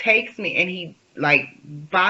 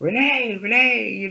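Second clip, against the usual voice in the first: high, screaming yell; 6 semitones higher than usual. Retelling an argument after putting headphones on, imitating him screaming at her. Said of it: "he's like screaming at me".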